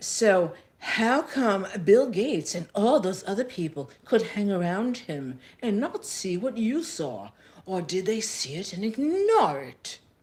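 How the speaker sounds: put-on, best-attempt English accent. Retelling an interview, the speaker voices the interviewer in a put-on English accent. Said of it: "I'm just gonna go into a, um, my best accent".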